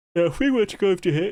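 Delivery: words spoken through a yawn. Talking viewers through some armour, yawning while talking. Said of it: "sorry, I'm yawning".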